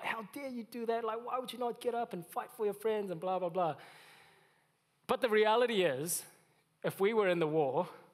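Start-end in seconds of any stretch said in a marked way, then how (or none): 0.0-3.8 mock pitched-up hollering. Describing war-movie viewers, the speaker acts out someone imitating someone yelling at TV. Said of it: "they're like yelling at the T V".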